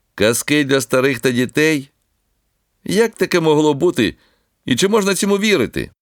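high, mocking, scornful jeering tone. The grandson Serhiy interrupts his grandmother and Olenka reading the Bible, in a mocking voice. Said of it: "пролунав насмішкуватий голос онука".

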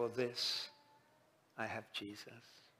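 put-on slurred, slow words. Retelling a stroke patient's words on the phone: imitating slow, slurred speech. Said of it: "It was very slow and it was very slurred".

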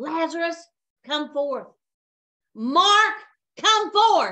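put-on loud, authoritative commanding call. Speaker retelling how they called a dying man forth, calling loudly. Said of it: "I did not, with a quiet voice, call him forth".

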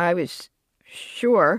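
ordinary delivery

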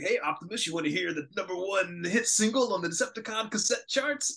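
very high, beboppy jive-talking hipster voice. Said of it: "[name], uh, beboppy talk".

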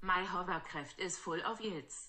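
speaking with German accent. Repeating a practice sentence a second time, now in a German accent. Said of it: "And now with a German accent".

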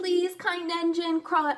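plain reading voice

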